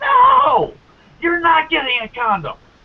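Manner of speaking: mock high-pitched, shrieking woman's scream. Retelling a story of a woman screaming at a man, imitating her screaming. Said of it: "she starts screaming".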